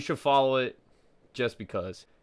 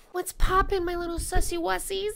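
fake girly voice, higher pitched. Greeting the chat after being asked for it: put-on girl voice. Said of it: "give me the girl voice. I just did".

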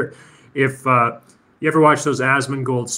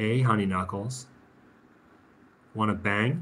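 put-on seductive voice, much lower, quieter; 4 semitones lower, 9 dB quieter than usual. Reenacting the Twilight series for viewers, mock-seductive Kristen Stewart impression. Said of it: "seductive eyes".

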